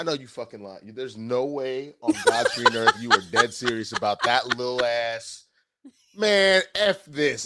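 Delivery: put-on dog voice. Retelling how the dog reacts to a small breakfast: voicing the dog. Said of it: "And she goes".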